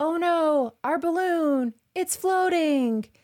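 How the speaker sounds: mock lament, wailed high and slow.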